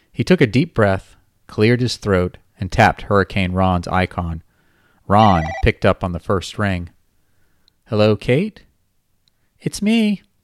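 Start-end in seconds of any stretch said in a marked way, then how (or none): 7.9-10.2 put-on very high, swooping babyish voice with manly undertone. Narrator reads a man's words as his call is picked up: babyish high voice. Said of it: "in a babyish high voice with an impossible-to-hide hint of manliness".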